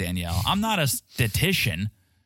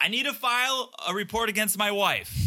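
mock shouting, very high pitch; 9 semitones higher, 3 dB quieter than usual. Retelling a man walking into a police station: imitating someone yelling. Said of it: "He's, like, yelling it".

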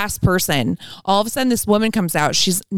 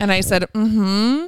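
normal talking voice

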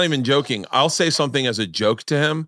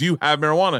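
pushy, insistent, aggressive, demanding tone; 2 semitones higher than usual. Retelling own past words to a man: imitating an aggressive question. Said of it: "And I'm being really aggressive".

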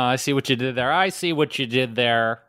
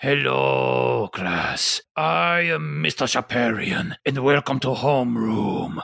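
grumpy, gristled, gruff and angry teacher voice. Recalling seventh grade, act out the homeroom teacher greeting his class in a gruff, angry Mr. Shaparian impression. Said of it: "that's how he talked".

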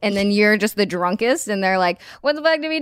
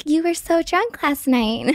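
put-on pitched-up sorority girl voice; 6 semitones higher than usual. Retelling waking up after a blackout, imitating the sorority big sister. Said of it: "This is a great impression".

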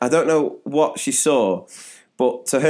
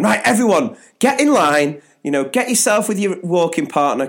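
impatient raised teacher-like voice, pitched up; 5 semitones higher than usual. Retelling a woman getting children to line up, retelling a raised voice. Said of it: "she's sort of like raising her voice".

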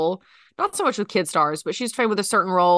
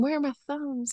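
soft, high mutter under the breath; 6 semitones higher, 6 dB quieter than usual. Retelling what Claire keeps saying everywhere she goes: imitating Claire muttering under her breath. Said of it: "just under her breath, she's saying".

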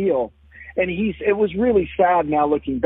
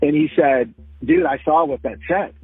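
normal talking voice

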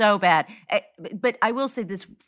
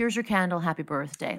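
put-on very sweet tone, quieter; 4 dB quieter than usual. Retelling a woman giving an extra pastry for a birthday: imitating a very sweet tone. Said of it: "in a very sweet".

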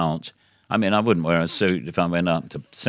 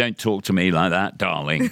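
put-on patronizing, condescending, annoyed, cross tone. Retelling what was said to an annoying cab driver: retelling a condescending "darling". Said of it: "you do the condescending darling".

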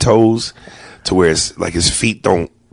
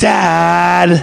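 very high "Dad" with long-drawn vowel; 10 semitones higher than usual. Imitating a son calling his father: drawn-out "Dad". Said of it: "he says it as though he spelt it D, fifteen A's and D".

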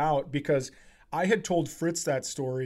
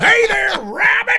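very high, very loud cartoon holler, belted out; 11 dB louder than usual. Joking about sounding like Yosemite Sam: Yosemite Sam voice. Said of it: "I sound like, uh, Yosemite Sam".

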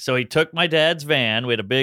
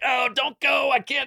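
mock frantic, very high panicked voice; 13 semitones higher than usual. Retelling begging the man with them not to go, acting out freaking out. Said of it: "I'm freaking out".

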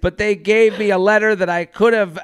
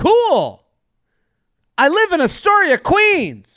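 swooping, exclamatory chirp, each phrase punched out; 9 semitones higher than usual. Reading out a man's dating app messages in character, every line an exclamation. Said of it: "I'm talking like this because they all have exclamation points".

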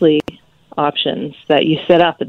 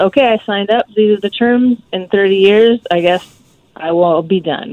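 plain

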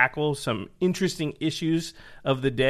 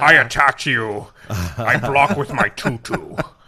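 put-on Scottish accent impression, lower pitched; 3 semitones lower, 7 dB louder than usual. Acting out a draft where both spoke as Sean Connery the entire time, do a Sean Connery impression. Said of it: "That sounds great with Sean Connery".

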